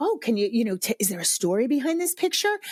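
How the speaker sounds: usual speaking voice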